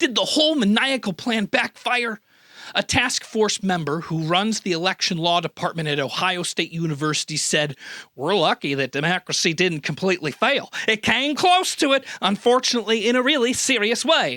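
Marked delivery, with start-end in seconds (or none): 8.1-14.4 very bad fake Midwestern accent. Quoting a task force member, the speaker reads the quote in a bad midwestern accent. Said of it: "that's about the worst Midwestern accent I've ever tried".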